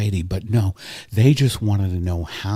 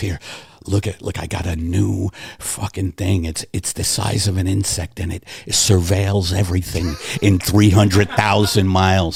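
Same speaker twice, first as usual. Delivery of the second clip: oblivious, show-off boastful tone. Imitating a billionaire showing off a gadget to a friend: imitating Jeff Bezos. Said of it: "And Bezos ignores it and goes".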